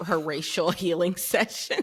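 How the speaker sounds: laughing while talking. Reading out a name from a topic of comments: laughing while talking. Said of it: "I still can't say it without laughing".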